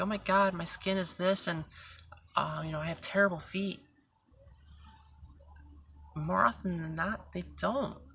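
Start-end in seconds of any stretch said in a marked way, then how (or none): none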